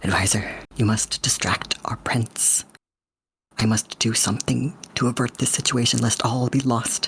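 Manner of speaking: covert, hushed whisper. A character turns covertly to the advisor, whispering. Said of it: "start to whisper".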